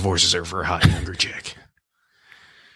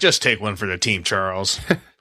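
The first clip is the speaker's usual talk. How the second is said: ordinary talk, nothing marked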